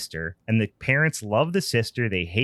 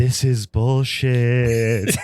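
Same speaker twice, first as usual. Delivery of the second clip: put-on ghostly whisper voice; 5 dB louder than usual. Retelling what the ghouls at the booth say: imitating a ghosty whisper voice. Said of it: "ghosty whisper voice".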